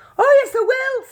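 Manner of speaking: tiny squeak, very high and loud. Narrator voicing Mike answering his parents' worry, in a tiny squeaky Mike Teavee voice. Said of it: "squeaked the tiny voice of Mike T V".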